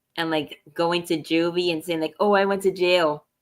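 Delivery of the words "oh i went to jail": ordinary talk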